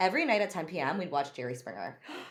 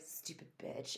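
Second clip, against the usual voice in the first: mock mutter, much quieter. Telling how her mom cussed her out, retelling an under-breath insult. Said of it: "and like under my breath".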